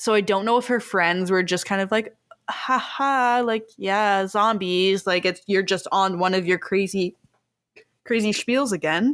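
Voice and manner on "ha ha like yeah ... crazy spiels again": usual speaking voice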